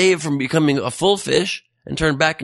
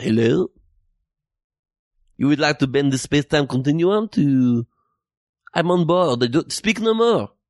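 put-on French accent. Imagining a phone call where a person of France picks up, French accent. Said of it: "It is the way I talk in my accent".

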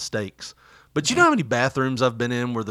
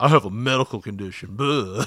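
dismissive, rude customer voice; 2 semitones lower than usual. Retelling a maskless customer walking past staff, imitating his voice. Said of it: "that's the way he sounded".

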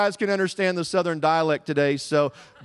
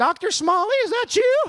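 put-on very high, horrific elderly woman's voice. Retelling a woman greeting the speaker at Walmart, horrific old woman voice. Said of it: "I hear the horrific voice of an 85-year-old woman".

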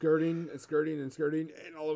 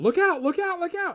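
put-on very high, very loud kid shouting; 14 semitones higher, 8 dB louder than usual. As a little tiefling boy chasing apples rolling downhill, in a yelling child's voice. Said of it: "you hear this child's voice yell at you".

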